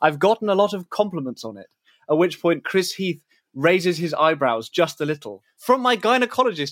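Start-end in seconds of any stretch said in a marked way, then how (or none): 5.6-6.7 shrill, high-pitched shriek. Recounting an interview, the speaker quotes the woman's answer, screeching. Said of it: "she screeches".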